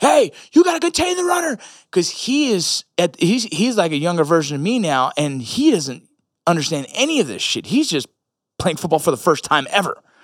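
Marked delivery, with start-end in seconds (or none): 0.0-1.6 high, loud pretend scream, yelling. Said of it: "I can't go to him and scream like".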